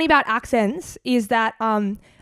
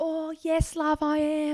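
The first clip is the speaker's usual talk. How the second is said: put-on British accent, soft, slow, very drawn out; 5 semitones higher, 8 dB quieter than usual. Retelling answering people who asked if they were british, in a fake british accent. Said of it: "are you British?".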